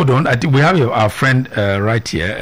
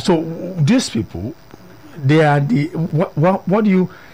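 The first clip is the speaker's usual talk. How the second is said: stuttering, stammering, searching for words, much higher pitch; 5 semitones higher than usual. Short of words in the middle of a question, the speaker is stuttering. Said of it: "I'm stuttering because I'm short of words".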